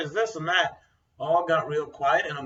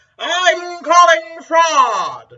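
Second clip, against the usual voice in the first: very high, very loud, shrill parrot screech; 13 semitones higher, 13 dB louder than usual. Describing a parrot that screams at random strangers, imitating a screaming parrot. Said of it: "so just screams".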